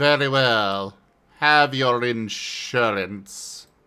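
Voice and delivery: cold, contemptuous tone. Granting insurance to someone who asked for it: disdainful like Severus Snape. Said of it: "you said it like Severus Snape being all disdainful".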